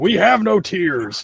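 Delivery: deliberate, slow, drawn-out, high character voice. Retelling a trailer where Venom eats hot wings: imitating Venom. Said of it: "his Venom eating hot wings".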